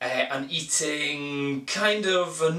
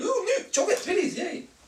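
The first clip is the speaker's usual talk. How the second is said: put-on very high, rushed, giddy childish delight. Joking about eating snacks like a kid in a sweet shop: imitating an excited kid. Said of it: "like a bloody kid in a sweet shop".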